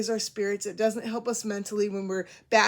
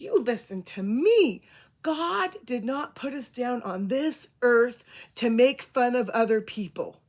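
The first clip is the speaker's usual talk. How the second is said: slow, rising, raised voice, stern scolding tone. Speaker retells what a woman said to her, retelling her voice going up. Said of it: "her voice kind of went up".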